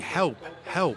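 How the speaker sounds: normal talking voice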